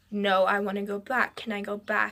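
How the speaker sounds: ordinary delivery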